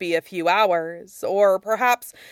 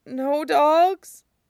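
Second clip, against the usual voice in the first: frightened, high, little whimpering voice; 8 semitones higher than usual. Reading a story, Wei Ying answers Lan Wangji: whimpering. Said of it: "he whimpered".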